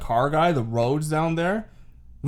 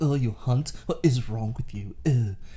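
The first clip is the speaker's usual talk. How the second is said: bad, snobby, put-on English accent; 3 semitones lower, 5 dB quieter than usual. Mocking how people in England react to hunting, bad Stewie Griffin impression. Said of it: "What accent was that?".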